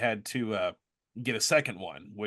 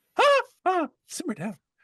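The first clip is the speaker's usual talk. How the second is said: very high-pitched, loudly belted character voice; 8 dB louder than usual. Asked by friends to do the voice of Stick on the spot: Stick voice. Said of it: "what do you think Stick would say about that".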